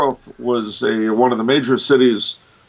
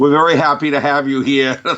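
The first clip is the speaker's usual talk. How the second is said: put-on thick, broad Boston accent, laid on; 3 semitones higher than usual. Retelling a speaker heard while nodding off, in a broad Boston accent. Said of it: "this broad Boston accent".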